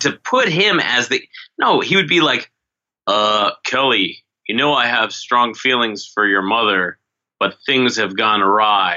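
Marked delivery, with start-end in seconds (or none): 3.1-9.0 ham-handed, badly overacted soap-opera delivery. Mocking a horrendous actor's line delivery: imitating Mel Silver's bad acting. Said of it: "he would talk like that".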